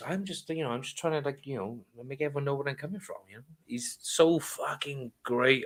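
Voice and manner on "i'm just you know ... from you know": dead calm, really soft, quiet voice. Imitating a comedian who screams on stage, then speaks: really calm voice. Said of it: "he just goes out in a really calm voice".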